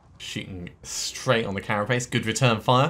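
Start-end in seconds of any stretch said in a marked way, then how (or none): 2.1-2.9 loud, heavy, massively sarcastic tone. Player commenting on a shot during a fight, massively sarcastic. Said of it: "I am being massively sarcastic".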